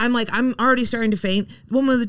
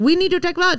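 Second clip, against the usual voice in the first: put-on Chinese accent with pitch raised; 7 semitones higher than usual. Retelling a doctor's visit, quoting the nurse: imitating a nurse with put-on accent. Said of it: "do the Chinese guy without the accent".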